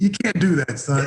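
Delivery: ordinary delivery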